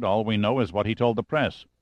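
usual speaking voice

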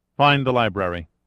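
plain reading voice

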